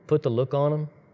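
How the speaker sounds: usual speaking voice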